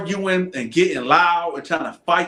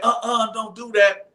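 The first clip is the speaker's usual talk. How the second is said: put-on older female voice; 5 semitones higher than usual. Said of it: "I thought it was a female guard, like an older female guard, because of the voice".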